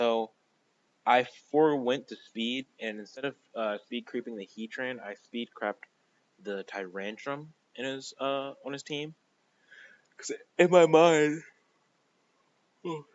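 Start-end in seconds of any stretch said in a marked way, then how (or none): 10.2-13.0 words spoken mid-yawn, pitched up and louder. Explaining a battle choice to viewers, yawning mid-sentence. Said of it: "sorry for yawning".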